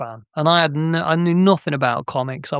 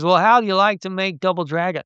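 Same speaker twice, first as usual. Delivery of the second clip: bad Texan accent, pitched higher. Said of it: "Excuse my terrible accent".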